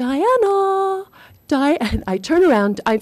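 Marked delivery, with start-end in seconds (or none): 0.0-1.8 very high, piercing call with first word drawn out. Retelling hearing a little voice pierce the newsroom calling her name: imitating Clare Boothe Luce's little piercing voice. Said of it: "this little voice that pierced the newsroom calling my name".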